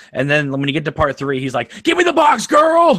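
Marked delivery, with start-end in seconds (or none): 1.9-3.0 very high-pitched, loud shrieking. Imitating Pinhead in part three of the movies: screaming Pinhead voice. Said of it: "he's always screaming".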